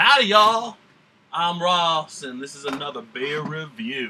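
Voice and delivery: put-on Southern accent, drawling twang. Opening his beer review video, the host greets viewers in a fake southern drawl. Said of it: "this southern drawl, is totally fake".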